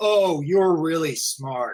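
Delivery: mocking, slow, sarcastic drawl. Example of a sarcastic comment on the internet: sarcastic. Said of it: "make a sarcastic comment".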